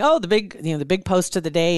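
ordinary delivery

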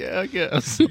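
glum, crestfallen, sad, slightly high voice. Imitating another player's sad in-character reply: imitating a sad reply. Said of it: "your whole face down turned a little bit".

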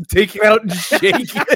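mock bossy voice, high-pitched and loud.

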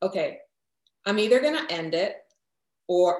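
choked-up voice catching with emotion. Retelling a turning point in the middle of the night: choked up. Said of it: "I get choked up when I say it".

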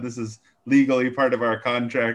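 put-on robot-like voice. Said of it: "you sound an awful lot like a robot".

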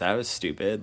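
ordinary talk, nothing marked

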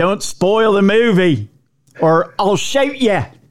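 bad, fake, terrible put-on Australian accent. Retelling what one man told another, in a terrible Australian accent. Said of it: "I know it's a terrible Australian accent".

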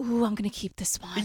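very low, creepy whisper. Retelling her impression of a man who took the pictures down, whispering. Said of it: "she, like, whispers it".

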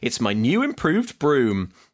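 ordinary delivery

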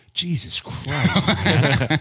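low, muttered aside of disgust under the breath. Retelling a parent's remark at a large dessert: imitating a disgusted mutter. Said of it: "kind of under his breath".

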